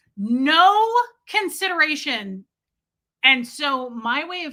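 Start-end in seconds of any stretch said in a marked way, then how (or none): 0.2-2.5 worked-up, high shouting rant with a drawn-out "no". Telling the audience about an inconsiderate lady, shouting. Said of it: "I'm shouting at you guys right now".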